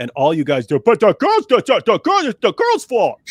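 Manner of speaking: very loud, swooping cartoon-character voice. Mocking someone's view, in a cartoonish put-on voice. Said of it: "who sounds like that?".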